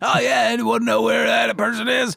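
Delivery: put-on high, creaky, rough-edged comedy character voice. Retelling what someone said during a match: imitating Matt Striker. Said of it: "he says it like a James Adomian character".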